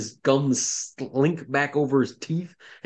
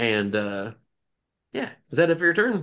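ordinary talk

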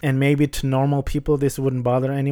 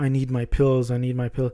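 put-on crazed, pleading voice. Retelling a police station scene, imitating a crazed criminal. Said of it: "this crazy, this criminal guy's like".

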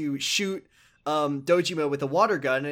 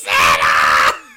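put-on booming, very deep, drawn-out roar of fury; 12 semitones lower, 12 dB louder than usual. Describing a game's ending scene, imitating Dojima's angry shout. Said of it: "He's so mad".

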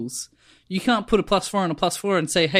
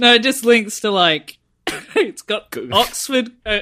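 pitched-up talking through laughter, half choking; 5 semitones higher, 5 dB louder than usual. Answering another speaker while laughing too much, laughing while talking, choking. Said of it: "I'm choking on my own spit 'cause I'm laughing too much".

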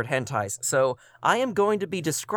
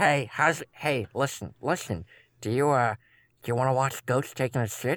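creepy, unsettling put-on voice. Imagining what the blinking cat wants to ask: voicing the cat as creepy Uncle Carl. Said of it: "in a really creepy, almost Uncle Carl-esque way".

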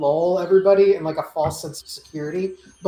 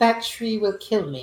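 quiet, hushed, said softly under the breath; 3 semitones higher, 4 dB quieter than usual. A player's character speaks up during a negotiation, saying it quietly. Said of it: "I'm going to quietly say".

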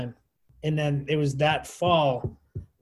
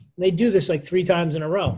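usual speaking voice

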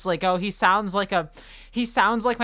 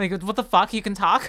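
plain

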